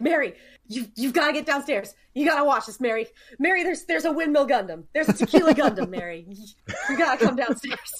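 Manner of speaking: plain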